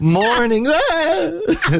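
startled, high laughing yelp on ah.

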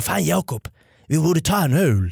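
put-on Scanian accent, Skåne dialect. Quoting Robin Paulsson's words at Norra Brunnen, in Robin Paulsson's Scanian accent. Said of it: "Jättebra skånska".

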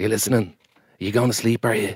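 put-on soothing voice. Answering another speaker's remark about a soothing voice: soothing Aidan Gillen voice. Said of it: "He has a very soothing voice".

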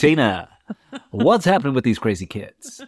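loud, put-on radio DJ presenter voice. Showing how they will talk on Sunday evening radio, radio presenter voice. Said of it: "I certainly have a radio voice. If you're going to be listening to 98FM on a Sunday evening, this is how I'll be talking".

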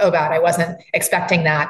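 ordinary talk

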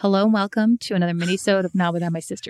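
natural, easy, everyday speaking voice. Redoing the intro in the other speaker's voice, imitating the sister's voice. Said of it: "I'll do your voice".

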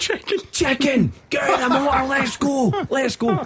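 very high, shrieked, screaming voice. Retelling a road row with a pedestrian: imitating a man screaming. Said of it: "So he starts screaming".

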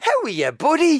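put-on Dublin Irish accent, very high-pitched. Speaker recalls a man's greeting when coming home in the evening: dublin accent. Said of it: "his Dublin accent was brilliant".

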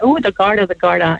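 scornful, jeering, mocking tone. Retelling how the landlord taunted the daughter: imitating a mocking taunt. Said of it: "He's mocking her".

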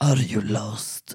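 very deep, unsettling, dark put-on voice. Speaker retells what a man stepping out of the shadows said, imitating a man's dark voice. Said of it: "sa med mörk röst".

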